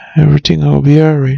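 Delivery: ordinary delivery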